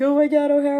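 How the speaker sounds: very high, loud, tearful sobbing wail, acted out. Recalling a friend terrified of her strict parents, imitating Stephanie crying. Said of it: "crying like".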